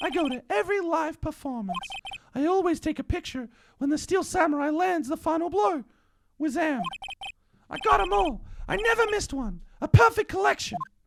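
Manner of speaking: very high, full falsetto. Voicing a character who tells of his photo collection: maximum falsetto. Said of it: "The the maximum falsetto is killing me".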